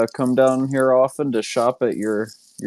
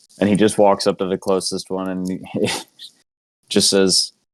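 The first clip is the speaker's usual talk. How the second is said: plain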